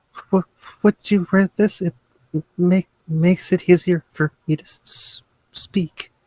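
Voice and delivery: high, halting stutter with repeated starting sounds. A character pulls out one of the rings and offers it, stuttering speech. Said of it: "I have a stutter and I can't help it".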